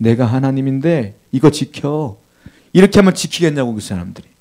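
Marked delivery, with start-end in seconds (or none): 0.0-2.2 weak, feeble, limp, powerless voice, slow. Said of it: "매갈이 없는 목소리로".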